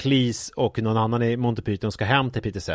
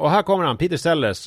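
high, announcing talk-show host voice; 6 semitones higher, 3 dB louder than usual. Retelling how a talk show introduced a guest: imitating a talk-show host's introduction. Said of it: "så att det har blivit så här".

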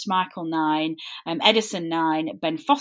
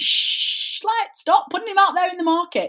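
very high-pitched yelling; 12 semitones higher than usual. Retelling what gets said to the TV: imitating screaming at the TV. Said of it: "screaming at the, the T V going".

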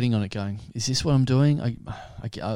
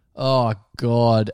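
put-on panicked, freaking-out voice; 5 dB louder than usual. Retelling panicking while the boss investigates, retelling freaking out. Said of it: "I'm like freaking out, just going".

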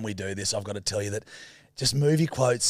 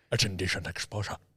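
put-on Scottish-accented voice, lower and quieter; 4 semitones lower, 5 dB quieter than usual. Imitating another speaker who sounded like Sean Connery: Sean Connery voice. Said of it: "she just became Sean Connery".

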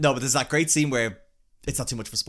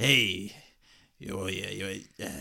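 put-on quiet, low old man voice; 5 semitones lower, 5 dB quieter than usual. Describing a film character in a newer movie, imitating an old man hunched over a bar. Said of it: "he's an old man hunched over a bar".

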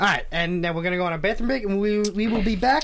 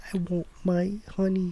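cartoon storybook bear voice; 6 dB quieter than usual. Asked how the bear talks, the speaker answers in a Winnie the Pooh voice. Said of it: "Why does he talk that way? He's like".

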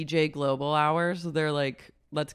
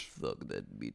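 very low, breathy whisper; 13 dB quieter than usual. Retelling what a cast member said on the show: EJ's really low voice. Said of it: "Her voice got really low".

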